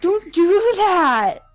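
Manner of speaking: yelling in character voice. Game master voicing Kira reacting to a magical message: Kira yelling. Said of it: "And she yells it in the kitchen".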